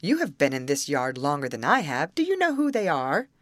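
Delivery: ordinary delivery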